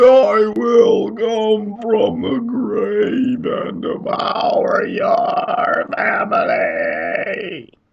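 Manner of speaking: inhaled speech, very high, loud, booming, and slow. Explaining odd things a voice can do, the speaker demonstrates: talking while breathing in. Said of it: "You can talk and breathe in at the same time".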